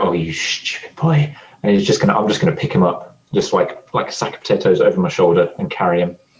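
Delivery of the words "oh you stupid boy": slow, exasperated, sighing delivery. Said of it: "Angus is gonna sigh and go".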